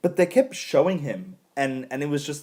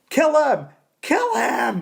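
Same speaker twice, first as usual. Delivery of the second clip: play-acted, shrill, very high, fed-up screaming; 10 semitones higher, 4 dB louder than usual. Retelling how they reacted to a character at the end: imitating own screaming. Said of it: "I was screaming".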